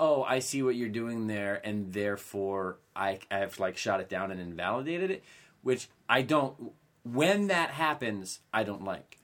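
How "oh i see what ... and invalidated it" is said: ordinary talk, nothing marked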